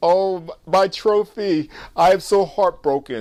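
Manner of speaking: put-on mournful, slow, heartbroken British accent. Recapping how Lincoln reacted to his shattered picture: imitating Lincoln, British accent. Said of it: "excuse me for my uh, British accent".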